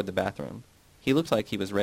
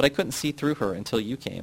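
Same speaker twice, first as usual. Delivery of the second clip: usual speaking voice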